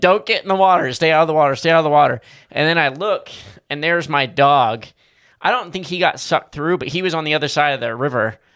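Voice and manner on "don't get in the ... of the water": acted-out loud yell, repeated. Retelling hanging on a tree by a roaring creek: retelling a blind yell. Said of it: "just blindly yelling".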